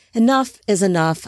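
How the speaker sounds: ordinary delivery, nothing marked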